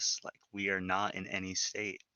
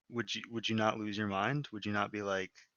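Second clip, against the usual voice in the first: ordinary talk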